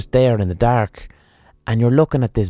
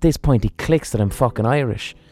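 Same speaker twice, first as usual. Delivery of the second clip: ordinary delivery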